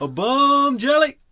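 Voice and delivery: shrill, very loud, very high shout. Retelling what a boy sitting on a garbage can yelled at girls: imitating someone yelling. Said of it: "He would just go".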